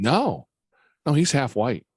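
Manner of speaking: mock dead-serious tone. Retelling how he answered someone's question about a child: mock dead-serious reply. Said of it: "just real serious going".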